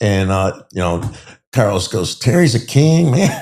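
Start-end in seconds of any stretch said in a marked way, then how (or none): 2.2-3.4 put-on Puerto Rican street-talk accent, pitched up. Retelling what a Latin King said in a standoff: imitating Carlos's Puerto Rican accent. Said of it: "He was Puerto Rican with his accent".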